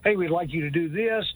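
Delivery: normal talking voice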